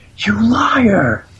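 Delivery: loud, high-pitched screaming.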